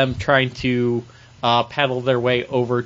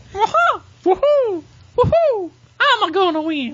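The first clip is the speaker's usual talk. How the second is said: put-on Italian accent, higher pitch. Asked to try an Italian accent, doing a Mario voice. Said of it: "my Italian accent is just Mario".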